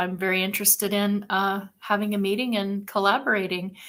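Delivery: ordinary delivery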